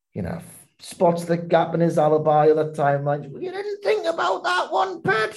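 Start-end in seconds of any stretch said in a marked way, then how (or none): 3.3-5.4 very high, scratchy, raspy northern voice. Describing how the TV detective catches a culprit's alibi gap, doing Vera's scratchy northern voice. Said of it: "she kind of talks like this, and she's got a scratch voice".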